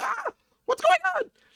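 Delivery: very high, very loud, panicked, alarmed screaming. Voicing villagers as a rock lands in their street: villagers screaming in alarm. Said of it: "everybody screaming".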